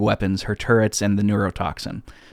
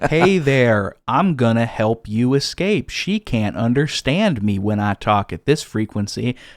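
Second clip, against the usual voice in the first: put-on ridiculous American accent. Recounting a scene, quoting Wheatley in his ridiculous American accent. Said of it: "talking in this ridiculous American accent".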